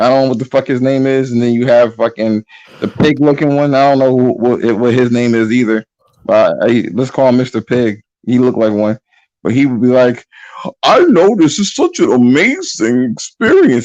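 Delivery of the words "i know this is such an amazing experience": high, slow voice breaking on the words. Imitating a video reviewer whose voice always cracks: imitating a cracking voice. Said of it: "his voice always cracks".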